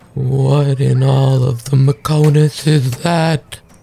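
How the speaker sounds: mock shocked, stunned, full of disbelief. Voicing a character's reaction during a tabletop game, shocked. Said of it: "you can hear the shock in his voice".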